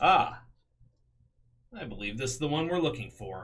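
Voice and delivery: mechanical, robotic voice. Voicing a helmeted figure who finds the captive: robotic voice through a helmet. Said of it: "a roboted voice through the helmet".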